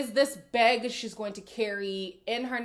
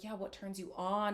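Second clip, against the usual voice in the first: put-on soft, sultry, seductive voice, quieter; 2 semitones lower, 9 dB quieter than usual. Retelling a contestant's flirty question on a date: imitating a soft sultry voice. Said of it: "she was speaking softer".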